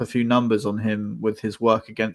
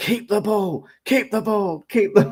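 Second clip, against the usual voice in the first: shrill, very high screaming; 10 semitones higher than usual. Retelling a shout from the sidelines to his team: imitating Hertzler screaming. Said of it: "he was screaming".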